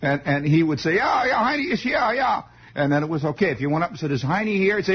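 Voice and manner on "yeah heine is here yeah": rotten put-on Bavarian German accent, very high-pitched. Acting out a talk with a man who only understood this way of talking, in a terrible, rotten Bavarian German accent. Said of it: "rotten Bavarian German accent".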